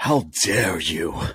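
outraged, indignant scolding with righteous outrage. Taking the floor to answer something said last week: mock-outraged Greta Thunberg impression. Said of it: "In my greatest Greta Thunberg voice".

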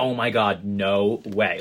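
stunned disbelief, slow and very drawn out. Retelling own reaction to hearing who was going to prom: imitating own shocked reaction. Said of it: "I was, like, shocked".

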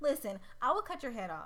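normal talking voice

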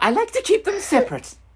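very high, flustered, squeaky freak-out voice. Answering whether they would freak out on people like Jen, doing a terrible Jen impression. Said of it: "That was my Jen impression".

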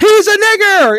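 sudden, high-pitched screamed outburst. Retelling how a guy from Seinfeld suddenly started screaming, reenacting someone screaming. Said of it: "he just started screaming".

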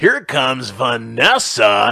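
loud, high, slow club DJ announcer voice. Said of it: "talking in my stripper D J voice".

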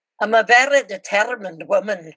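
best-effort put-on Scottish accent. Retelling her answer to someone asking about serving two missions, best Scottish accent. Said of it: "And I said in my best scottish accent".

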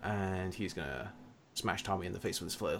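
normal talking voice

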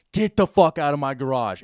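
full-throated, loud, raging screaming yell. Retelling chasing a man from the garage, the speaker retells a scream at him. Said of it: "i'm screaming at seven in the morning to the top of my".

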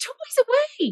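very high-pitched voice. Retelling telling her children to put toys away; high-pitched voice. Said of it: "in that high pitch".

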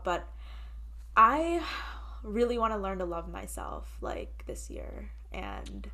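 halting, teary, choked-up voice catching near tears. Speaker sharing a final personal goal for the year, starting to tear up. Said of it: "i'm starting to tear up".

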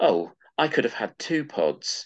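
put-on petulant spoilt-brat voice. Quoting a villain's line from episode three: imitating a spoilt brat. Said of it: "sort of like a spoilt brat said".

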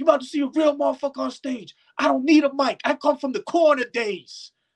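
high-pitched, boastful, hyped-up screaming. Retelling a guy at a venue who skips the mic: imitating Knack screaming. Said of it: "this guy's screaming".

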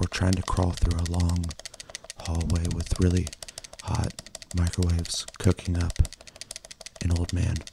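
hushed asmr whisper, close to the mic. ASMR host whispers into the mics for an episode, whispering. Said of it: "I'm gonna whisper into these mics".

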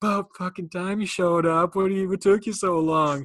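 put-on very loud, shrill, belligerent drunk yelling. Retelling how they greeted the brother who came to drive them, acting out belligerent drunkenness. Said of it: "we are belligerently drunk".

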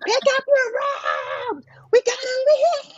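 high, mock yelling.

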